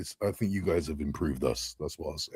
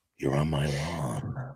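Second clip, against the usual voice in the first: hushed, soft, hateful voice, "lawn" drawn out; 3 semitones lower, 5 dB quieter than usual. Showing someone what their way of talking reminded you of, do Clint Eastwood in Gran Torino, full of hatred. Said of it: "how Clint Eastwood was like".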